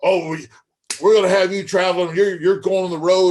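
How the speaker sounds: big booming, high, freaked-out excited voice. Retelling Ox's promise of traveling: imitating Ox's big booming voice. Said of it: "that big booming voice".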